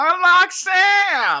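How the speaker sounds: very high, loud, swooping shriek, drawn out. Retelling a restaurant commercial, imitating someone screaming. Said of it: "he's, like, screaming".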